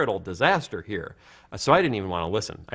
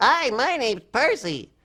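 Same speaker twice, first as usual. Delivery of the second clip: put-on voice of a little kid. Demonstrating a little kid character, in Percy little kid voice. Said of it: "I do Percy P".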